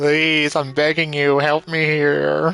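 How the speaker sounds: mock pleading voice. Imitating a game character's begging voice: imitating a pleading voice. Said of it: "His voice. He's like".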